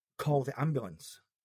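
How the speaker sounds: ordinary delivery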